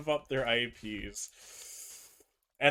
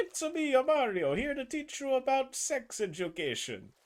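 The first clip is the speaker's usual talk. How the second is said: exaggerated, very high-pitched, all-in delivery; 11 semitones higher than usual. Retelling a Nintendo sex ed video, imitating Mario's voice. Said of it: "the guy who did Mario really went all in on it".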